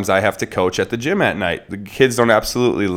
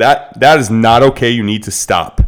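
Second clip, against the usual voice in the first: firm, hard, raised, commanding, authoritative voice; 5 dB louder than usual. A parent shows how to stop a child who is being unsafe: hard authoritative voice. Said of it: "That hard authoritative voice".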